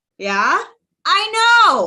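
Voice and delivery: thrilled, excited, loud bursting shouts. Showing a preview of every box in the collection, yelling excitedly. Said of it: "so sorry for yelling. I'm really excited".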